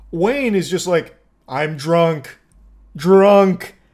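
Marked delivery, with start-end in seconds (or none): 1.4-3.7 loud, blunt, dumb caveman voice. Discussing a drunk driver's story, the speaker imitates him: imitating Wayne's caveman talk. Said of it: "Speaking like a caveman with like one word".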